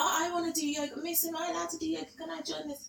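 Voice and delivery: put-on very high, eager, pleading, begging kid voice. Retelling how school kids now ask to join yoga: imitating begging kids. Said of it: "I get kids begging".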